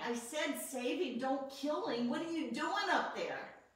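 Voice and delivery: play-acted angry yelling rant with cussing. Recalling cussing God out on the way to the hospital: retelling yelling at God. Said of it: "yelling at him".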